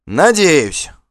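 playfully bold. Vigmar answers Asfald's parting words, cheeky. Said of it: "задорно ответил Вигмар".

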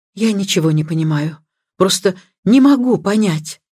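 ordinary delivery

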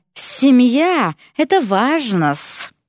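firm, curt, insistent tone, cut off short. Nagina cuts off Erik's request and insistently adds a remark. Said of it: "отрезала Нагина и настоятельно добавила".

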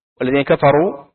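ordinary delivery

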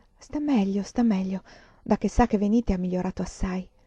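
plain reading voice

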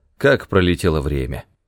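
ordinary delivery, nothing marked

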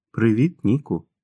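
plain

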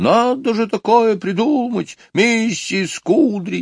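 shrill, thin, cross, very high irritated voice. A woman hurrying away down the corridor repeats to herself, in a thin angry voice. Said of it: "тонким, сердитым голосом".

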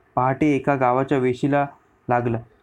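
ordinary delivery

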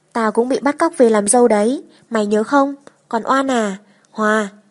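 plain reading voice

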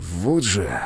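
low grumbling mutter, under the breath. After a call ordering him into the office on sunday, the narrator is muttering. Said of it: "пробормотал я".

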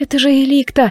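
whispering. Laurie answers the narrator's question, whispering. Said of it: "прошептала она".

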